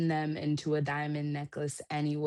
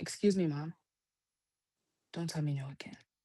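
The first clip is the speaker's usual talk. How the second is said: put-on polite voice, much quieter; 4 dB quieter than usual. A mother imitates her daughter addressing her, in a polite voice. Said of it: "and she's so polite. She goes".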